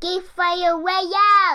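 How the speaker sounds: very loud shouting. Co-host asked to try the show name one more time, real loud: shouting very loud. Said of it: "Geekfather real loud".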